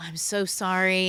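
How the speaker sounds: put-on embarrassment. Mom retelling her apology after her child refused the offer, re-enacting mortification. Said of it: "I am mortified".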